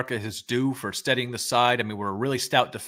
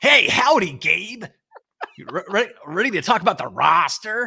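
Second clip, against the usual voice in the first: raised, put-on American accent; 8 semitones higher, 5 dB louder than usual. Imitating someone's daily voice memo, in a put-on american accent. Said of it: "Like that that American accent".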